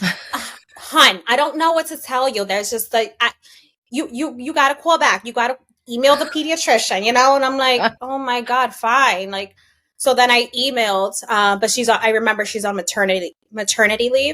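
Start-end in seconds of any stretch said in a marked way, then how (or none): 0.0-7.4 put-on heavy New Jersey accent, laid on thick. Quoting the pediatrician's office staff, imitating a thick Jersey accent. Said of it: "talk in like the most Jersey accent".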